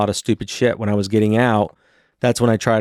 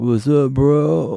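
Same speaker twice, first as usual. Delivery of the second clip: put-on, lazy, drawled stoner accent; 4 semitones higher than usual. Joking about cannabis users stuck in that mode: stoner drawl. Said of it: "that stoner draw".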